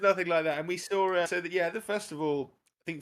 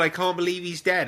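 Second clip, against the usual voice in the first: ordinary talk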